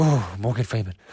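quavering, trembling, shivering voice. Saying it as someone from Antarctica would, shivering voice. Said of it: "Get it because of the cold, the shivering".

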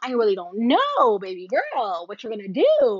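swooping, sing-song put-on signature voice. Explaining a celebrity's catchphrases, showing her famous way of talking: B Simone voice. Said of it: "even just talking in that voice".

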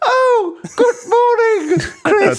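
put-on funny old woman voice, very high. Granny greets chris at the door of her gingerbread cabin, comical old granny voice. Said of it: "that comical old granny voice too that [name] is about to do".

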